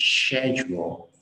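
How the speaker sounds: slow, British "shed-yule" pronunciation of "schedule".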